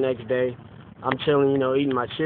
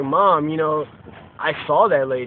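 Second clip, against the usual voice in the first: ordinary talk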